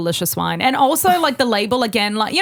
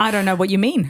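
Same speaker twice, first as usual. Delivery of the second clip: ordinary talk, nothing marked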